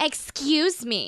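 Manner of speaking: entitled demanding woman voice. Asked to do an old lady voice, the speaker offers a Karen voice. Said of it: "That's Karen".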